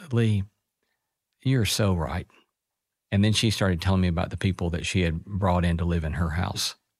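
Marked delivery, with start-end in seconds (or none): 0.1-2.3 tender, warm-hearted, gentle, kindly tone. Retelling what a woman said after pulling the speaker aside: imitating a gentle voice. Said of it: "very gently said".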